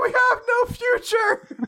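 crying schoolkid voice, pitched very high. Describing a scene, the speaker imitates the kid in the classroom crying. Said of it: "the kid in the classroom crying like".

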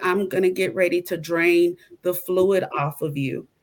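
ordinary talk

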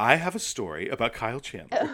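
swooping, sing-song storytelling voice. Teasing the other speaker by imitating how they announce Kyle Chandler stories: imitating Ryan's Kyle Chandler story voice. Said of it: "it's always done in this voice".

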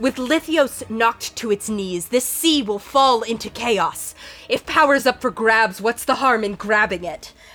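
words forced past a clenched jaw, through gritted teeth. Mid-swordfight, she swings her sword back around at the party, speaking through her teeth. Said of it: "through her teeth".

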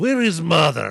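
laid-on cartoon Russian accent. Mocking a movie actor's accent, in a Boris and Natasha Russian accent. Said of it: "You've seen Boris and Natasha from Rocky".

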